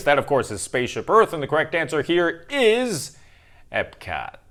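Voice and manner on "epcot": disappointed tone with real letdown. Giving the answer to a park question: disappointed 'epcot'. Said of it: "I say Epcot with such disappointment in my voice".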